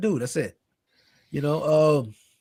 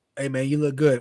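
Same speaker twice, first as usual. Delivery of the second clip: ordinary delivery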